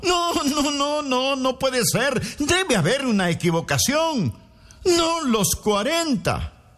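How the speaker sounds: high, disbelieving shout, crying out. Vespasiano, seeing the forty fighters step forward, shouts. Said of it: "gritó".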